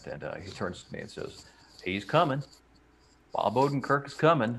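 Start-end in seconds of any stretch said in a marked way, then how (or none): 1.8-4.6 put-on heavy Southern accent laid on thick, pitched up. Retelling what a player said on turning to the speaker: imitating McCutcheon's thick Southern accent. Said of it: "he's got this thick Southern accent".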